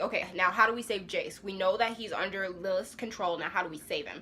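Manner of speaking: usual speaking voice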